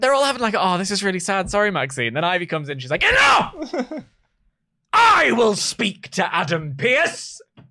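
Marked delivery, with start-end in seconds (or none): 3.0-7.4 put-on angry shout, slow, words drawn out, swooping. Speaker recapping a show where Ivy bursts in, imitating Ivy's angry shout. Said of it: "She was so angry".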